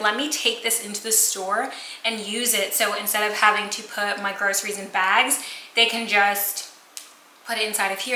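ordinary delivery

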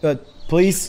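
high, rattled, nervous voice.

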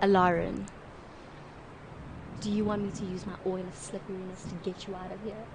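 hushed, very sexy, sultry, seductive voice. Voicing a character who offers to free lauren with oil: super sexy seductive voice. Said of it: "in that super sexy, seductive".

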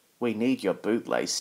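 ordinary delivery

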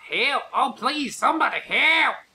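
put-on Southern accent, in distress. Calling for help from up the road, in a distressed southern accent. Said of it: "Distressed Southern accent".

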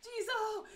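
high, loud pleading shout.

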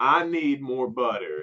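put-on, acted shouting. Retelling how a man turned and yelled at an employee, imitating the yell. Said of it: "and yells".

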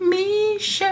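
tiny, squeaky voice pitched way up high.

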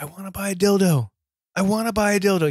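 restrained half-shout. Describing a man's bit where he keeps yelling one line at laughing people, retelling a yell. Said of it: "He just starts yelling".

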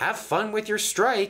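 very high, playful, teasing taunting tone. Logan, the little steam engine, teases Gordon before puffing away. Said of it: "he teased".

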